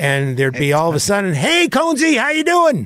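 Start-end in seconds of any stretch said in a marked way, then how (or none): 1.3-2.9 very high, swooping, sing-song voice, barging in. Retelling a neighbor character interrupting an interview: Doug the Neighbor character voice. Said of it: "he played this character called Doug the Neighbor".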